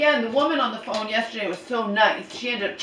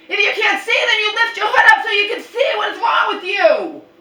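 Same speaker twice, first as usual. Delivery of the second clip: very high, shrill, loud scolding yell; 11 semitones higher, 6 dB louder than usual. Retelling scolding someone who walked blindly toward a car: imitating own past yelling. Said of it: "I didn't yell at her like that".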